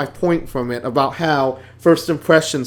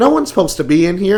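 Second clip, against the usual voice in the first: put-on, fast, very snarky brush-off; 3 semitones higher, 3 dB louder than usual. Retelling what an unfriendly security guard told her, mock-snarky voice. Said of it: "she says it in a very snarky voice".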